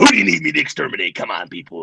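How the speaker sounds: put-on ghost voice. Appearing after being summoned in a mirror: Beetlejuice voice. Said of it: "I'm Rhythm Beetlejuice".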